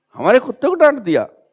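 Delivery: high, fast, offended and indignant outburst.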